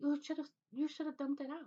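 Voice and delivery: put-on broken Spanish accent. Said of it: "with her little broken accent".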